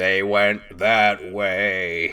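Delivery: methodical, slow, eerie talking-skull voice, way drawn out. Recounting a cartoon scene, voicing the skull that answers a lost character, slow and creepy. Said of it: "very kind of like methodical, slow, and creepy".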